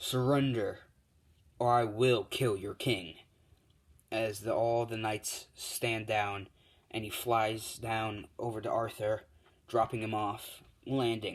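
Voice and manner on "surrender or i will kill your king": deep, low voice. Telling a story, voicing a flying hero demanding the knights surrender: deep voice. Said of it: "as he speaks in English in a deep voice".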